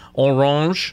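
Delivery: the word Orange pronounced the French way. Speaker tests a French accent on a company name: French accent. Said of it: "I'll test my French accent here".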